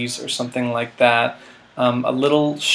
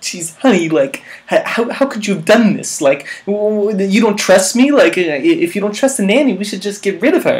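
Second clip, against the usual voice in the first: put-on nervous, neurotic voice; 8 semitones higher, 6 dB louder than usual. Retelling trying an audition scene in a Woody Allen voice. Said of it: "in, like, a Woody Allen voice".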